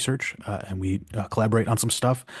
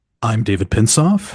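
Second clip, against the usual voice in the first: more confident, louder; 8 dB louder than usual. Giving their name at the podcast's opening after a co-host's note: more confident. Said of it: "little bit more confident".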